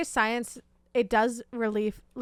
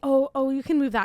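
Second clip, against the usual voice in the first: mock sheepish, embarrassed and flustered tone; 3 semitones higher, 3 dB louder than usual. Retelling a coworker's reply about her makeup bag: imitating an embarrassed coworker. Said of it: "She was kinda, like, embarrassed".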